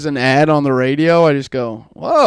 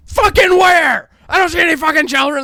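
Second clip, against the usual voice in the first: put-on furious yelling rant, very high and raging; 12 semitones higher than usual. Retelling a dad's reply when asked for sausage: imitating dad raging. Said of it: "my dad's just raging".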